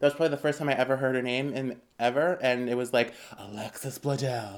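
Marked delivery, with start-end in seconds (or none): 3.4-4.6 deep, weird, dramatic movie-trailer announcer delivery. Retelling how a movie trailer said an actress's name: weird announcer voice. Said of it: "kind of like the weird announcer voice".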